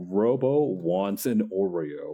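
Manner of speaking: very slow, carrying, projecting stage voice. Retelling how the RoboCop actor called to the crew: imitating a projecting voice. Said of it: "he says with a very projecting voice".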